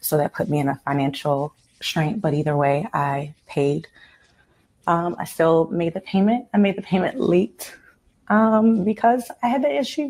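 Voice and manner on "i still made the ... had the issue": emotional, pitched-up voice. Explaining to someone why a payment was late, emotional. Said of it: "I'm sorry, I'm emotional".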